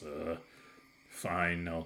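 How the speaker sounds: low quiet mumbling. Voicing a guard who agrees to wait: mumbling guard. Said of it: "he mumbles a little bit".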